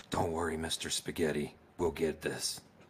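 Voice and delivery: soft, reassuring half-whisper, very close to the ear. Voicing a character flying another up, half-whispering in his ear: half-whispering in character. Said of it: "I whisper in his ear".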